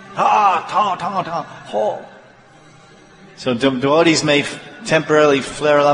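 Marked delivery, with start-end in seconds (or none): 0.2-2.1 high, stormy, angry outburst. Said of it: "she's like a tempest".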